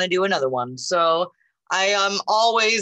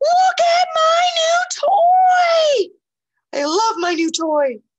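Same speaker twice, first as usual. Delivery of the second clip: very high, loud, excited voice, drawn-out "toy"; 5 dB louder than usual. Reading the story aloud, the speaker voices Piggy in a high-pitched Piggy voice. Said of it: "I give Piggy a high-pitched voice".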